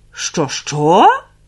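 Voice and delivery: astonished, taken-aback, low surprised voice. A narrator reads the magpie questioning the kittens, surprised. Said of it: "здивовано запитала".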